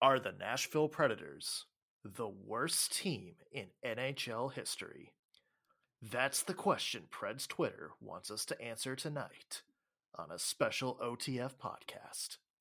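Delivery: slow, grand, theatrical announcer delivery. Opening a special podcast episode with a question, in a dramatic delivery. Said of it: "How is that for dramatics".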